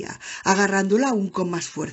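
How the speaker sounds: plain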